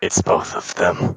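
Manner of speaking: very low, deep muttered aside. Right after saying so, speaker gives an aside to the group, muttering under breath. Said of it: "I'm gonna mutter under my breath".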